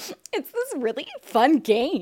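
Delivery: giddy, swooping, drawn-out sing-song voice. Retelling how Logan promoted the game: imitating Logan being giddy. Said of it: "being, like, giddy about it".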